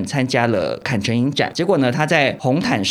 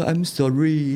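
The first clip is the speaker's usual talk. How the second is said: put-on relaxed, languid French accent; 3 semitones higher than usual. Acting out a French influencer's apology, mimicking a lazy French accent. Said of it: "就是法国腔讲，就是比较慵懒".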